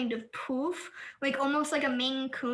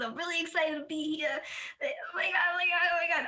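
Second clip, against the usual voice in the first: bubbly, gushing, cute, excited little character voice; 4 semitones higher than usual. Introducing a goth character named Buttons to the group, in a cute Smith voice. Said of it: "my classic voice for like anything that's cute".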